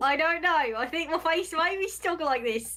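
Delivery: put-on drifting into British accent. Answering someone who asked them to stop smiling, slipping into a British accent. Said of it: "That went British".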